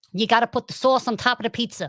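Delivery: rough, attempted Boston accent. Asked by the others to let them hear one, trying a Boston accent. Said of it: "let's hear Boston".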